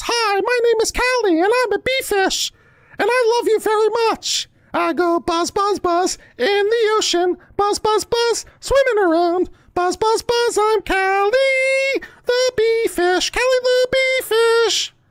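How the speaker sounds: very high, little made-up creature voice. Showing how a made-up bee fish named Callie speaks: Callie the bee fish voice. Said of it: "it speaks like this".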